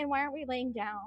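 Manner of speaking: small, little chihuahua dog voice. Retelling what the little chihuahua seemed to say: voicing the chihuahua. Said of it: "she was like".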